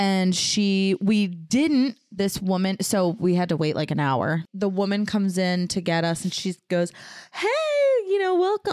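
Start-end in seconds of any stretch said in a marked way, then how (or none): 7.3-8.7 very high, sweet, bubbly voice. Retelling how the ultrasound tech greeted them: imitating a bubbly, sweet greeting. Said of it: "She was so bubbly, so sweet".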